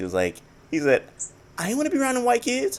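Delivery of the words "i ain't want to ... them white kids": put-on high-pitched voice. Retelling a man talking about desegregation, imitating a high-pitched voice. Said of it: "He kind of had a high pitched voice".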